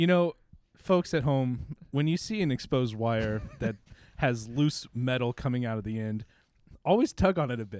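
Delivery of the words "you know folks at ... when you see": plain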